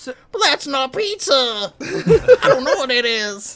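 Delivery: very high, loud cartoon voice. Retelling a cartoon scene, delivering Shaggy's line as a Shaggy impression. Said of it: "That was a really good impression".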